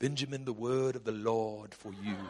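imitated British accent. Retelling how a man in a huddle prophesied over him, in a British accent. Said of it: "when people prophesy with a British accent".

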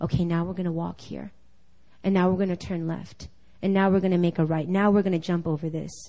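soft, gentle, hushed, guiding half-whisper. Imagining God leading someone blindfolded by the hand: half-whispering as God. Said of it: "and he's whispering".

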